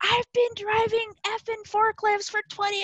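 acted, furious, high angry screaming outburst. Recounting a job seeker who yelled and smacked the desk: retelling someone screaming. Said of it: "He starts screaming at me".

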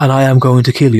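straight-faced, sexy voice, said plainly. Retelling the kitchen scene as Billy: imitating Billy's sexy voice. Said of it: "he's talking in his sexy voice".

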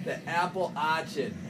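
Boston accent. Repeating a phrase to show regional pronunciation, Boston accent. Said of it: "Or should I say it in a Boston accent?".

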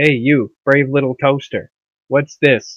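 condescending, patronizing, talking down. Showing how they'd address him when being condescending. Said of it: "when we want to be condescending".

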